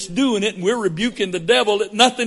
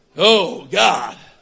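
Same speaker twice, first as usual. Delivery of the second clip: put-on old-fashioned, grand theatrical, prayer-like tone; 4 semitones lower than usual. Mocking how some people pray aloud, King James prayer voice. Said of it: "we pray in what we suppose is a King James voice".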